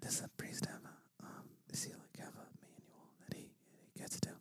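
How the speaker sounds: whispered voice. Retelling what she asked him during mass, whispering in his ear. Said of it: "she just whispered, like in my ear going".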